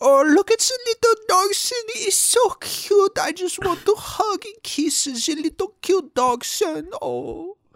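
very high-pitched, doting, gushing voice. A speaker acts out pretending to be Hitler enjoying his dachshunds; doting Hitler impression. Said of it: "I pretend that I'm Hitler, really enjoying".

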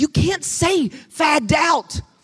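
stage whisper, said slowly. Retelling a whispered warning to mother: retelling a whisper. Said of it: "I whispered in her ear".

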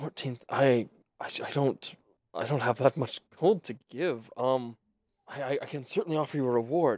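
dazed and confused. Game master voicing a character who lacks the gold to pay, disoriented. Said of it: "He's like, / And he still seems very disoriented".

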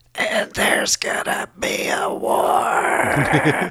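every word stretched out slowly. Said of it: "Get outta here with that voice".

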